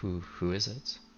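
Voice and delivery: gentle, soft, quiet, hushed voice. Game master voicing a character answering a knock at the door, in a soft voice. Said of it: "you hear a soft a voice reply".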